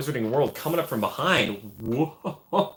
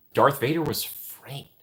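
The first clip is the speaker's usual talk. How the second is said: ordinary delivery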